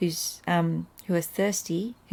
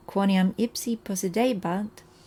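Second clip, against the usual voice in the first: normal talking voice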